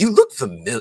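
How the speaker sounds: bad, very high, loud Broadway accent. Retelling meeting a director at an event: bad Harold impersonation. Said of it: "he's got that Broadway accent".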